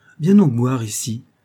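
delighted exclaiming. A man, delighted at finding a secret drawer, calls out with a delighted cry. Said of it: "s'écria Luke, enchanté de sa découverte".

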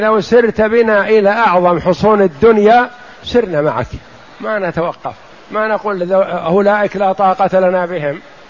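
ordinary delivery

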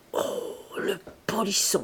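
half-whispered, breathy, amused murmur. A woman answers a man's teasing remark; murmured and amused. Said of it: "Murmura-t-elle, désarmée, égayée".

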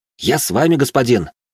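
high, happy, eager, joyful cry. A young companion accepts the narrator's invitation, exclaiming joyfully. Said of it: "радостно воскликнул он".

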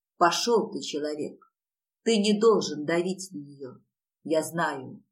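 ordinary delivery, nothing marked

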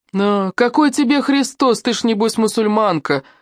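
high, derisive, scoffing voice with a snort. A passing young man answers a woman begging for help, scoffing. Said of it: "хмыкнул проходящий мимо парень".

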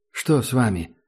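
ordinary delivery

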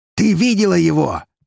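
loud triumphant cry pitched way up. Bronitsky asks Eri, exclaiming triumphantly. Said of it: "с триумфом в глазах воскликнул Броницкий".

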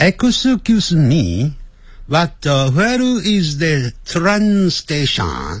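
read with a Japanese-sounding accent. Trying out an English line while adjusting the voice, Japanese-sounding accent. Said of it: "刚才念的有点像日本人的声音".

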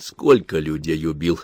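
plain reading voice

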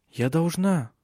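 plain, simple, unforced delivery. Narrator reads Celia answering a sobbing woman, quiet. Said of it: "тихо сказала Силия".

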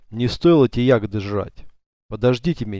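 ordinary delivery

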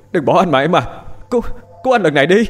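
screaming. Left behind, a man runs after the departing car, screaming. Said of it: "Hiệp cố chạy theo gào thét".

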